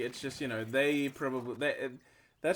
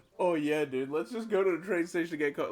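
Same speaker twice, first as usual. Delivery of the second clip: loud, brazen, openly mocking voice; 4 semitones higher, 4 dB louder than usual. Retelling a friend openly mocking a guy, loudly: imitating loud mockery. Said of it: "openly mocking him".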